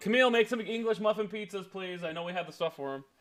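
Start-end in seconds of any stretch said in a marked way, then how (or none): 0.0-2.0 high-pitched yell, projected upward. Turning around to call to someone upstairs: yelling to someone upstairs. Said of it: "turn around and yell at her".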